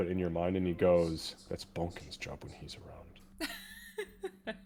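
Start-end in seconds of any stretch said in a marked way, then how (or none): 1.5-4.6 hushed, slow whisper, barely audible, under the breath. Game narrator voices Marcus as Kira hears him in her mind, Marcus whispering under his breath. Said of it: "you hear Marcus kind of whispering under his breath".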